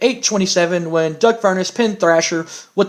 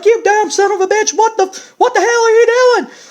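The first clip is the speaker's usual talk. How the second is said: very high-pitched, very loud, cursing freak-out; 5 dB louder than usual. Acting out the man whose car was just smashed, imitating Jim Cornette freaking out. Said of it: "Jim Cornette freaks the freaks the hell out".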